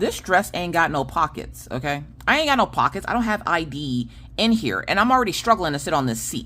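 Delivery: normal talking voice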